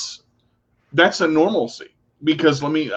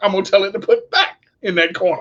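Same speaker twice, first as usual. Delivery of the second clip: much higher, proud, boasting voice, pitched way up. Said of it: "you're like".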